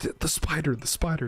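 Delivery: put-on panicked yelling. Retelling waking from a spider nightmare and answering a girlfriend, retelling panicked yelling. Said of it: "what the fuck are you yelling for?".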